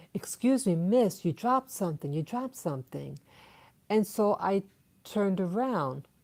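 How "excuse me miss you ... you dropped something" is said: usual speaking voice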